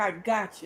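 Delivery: put-on self-assured, confident, knowing reassurance. Retelling how a character said her line, imitating a knowing, confident line. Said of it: "like she knew it".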